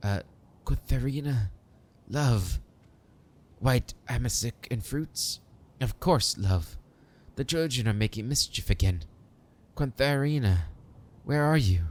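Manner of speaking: put-on frail, tender, longing old man's voice. Voicing an old man calling for a lost love: frail, tender, longing voice. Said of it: "frail voice is laden with tenderness and longing".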